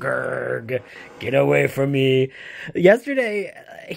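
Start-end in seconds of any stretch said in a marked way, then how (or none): 0.0-2.3 grumpy, growling cat voice. Voicing a grumpy cat growling at another cat: growling cat voice.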